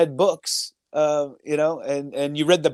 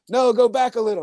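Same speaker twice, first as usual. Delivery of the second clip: put-on yell, higher; 7 semitones higher than usual. Retelling being told to turn a frozen antenna: imitating someone yelling. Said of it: "he's yelling out".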